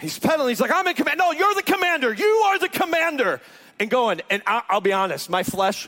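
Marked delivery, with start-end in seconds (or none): 0.7-3.4 put-on high-pitched yelling. Retelling a man on a bike yelling about who is in command: imitating a man yelling.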